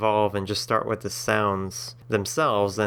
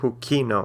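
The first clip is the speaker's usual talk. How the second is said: hukino with the weight on ki. Explaining second-to-last syllable stress, put stress on ki in hukino. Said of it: "the second to last syllable is the ki part, so it's hukino".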